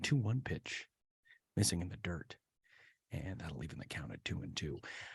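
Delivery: low, hushed, breathy, whispered announcer voice. Showing how low the voice goes for a golf-style call: low, hushed golf-broadcaster voice. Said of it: "I guess I could get my voice down a little low".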